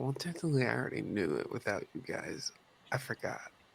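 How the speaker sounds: barely audible, very quiet mutter under the breath. Speaking in character as an aside to the group: muttered under breath. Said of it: "under my breath".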